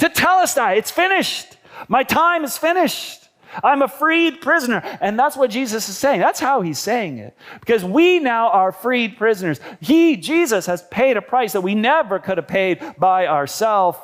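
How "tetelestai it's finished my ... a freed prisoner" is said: pitched-up yell. Acting out a released prisoner reading his cancelled sentence: yelling as a freed prisoner. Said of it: "he would yell".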